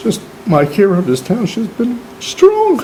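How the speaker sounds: choked-up crying.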